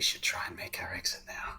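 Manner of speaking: barely audible hushed whisper. In a role-play scene, a character answers the narrator's question; quiet whisper. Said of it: "very quietly whisper".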